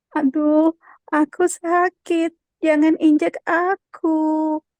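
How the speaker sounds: small little-creature voice, very slow. Voice exercise: speaking as an ant, in a small ant voice. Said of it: "Satu lagi suara kecil".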